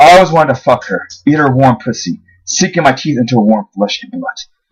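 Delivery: plain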